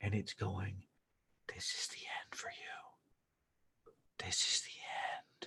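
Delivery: hushed, eerie, slow, drawn-out whisper. Describing an invitation that whispers while she talks to you, imitating a whisper. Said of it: "you can hear it is whispering".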